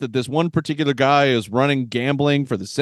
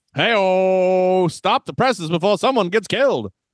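put-on pitched-up classic old-movie delivery, drawn-out "hey-oh"; 5 semitones higher than usual. Joking about a feud between journalists, the speaker uses old-movie talk. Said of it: "This is how you talk in a movie like this".

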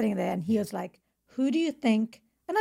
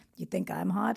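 put-on deep American accent, quieter; 3 semitones lower, 6 dB quieter than usual. Retelling what a guy said back to the speaker, in a deep american accent. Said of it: "He had this deep American accent".

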